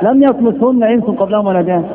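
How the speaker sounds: plain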